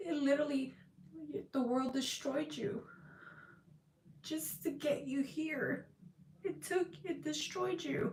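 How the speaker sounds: soft, high, tearful voice, talking through crying. Speaking after a victory, thanking others, crying. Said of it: "I don't know why I'm crying".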